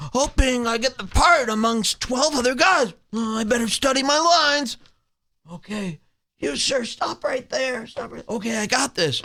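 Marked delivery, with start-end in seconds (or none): 3.1-9.2 mocking put-on nervous-actor voice, higher pitched. Acting out the comedian studying lines at an audition: mocking Brian Callen impression. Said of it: "here's me in the waiting room".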